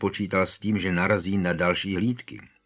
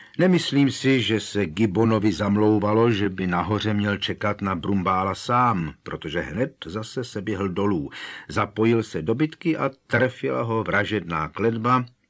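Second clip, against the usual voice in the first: ordinary delivery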